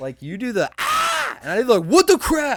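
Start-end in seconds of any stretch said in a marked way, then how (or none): 1.8-2.6 full-throated, high, loud yell, voice holding. Showing how own yelling sounds compared to screaming: imitating own yelling. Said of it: "I don't scream. I yell".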